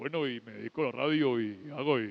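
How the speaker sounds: very deep, low radio announcer voice. Recalling a radio announcer he once heard, deep radio announcer voice. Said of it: "era una voz profunda".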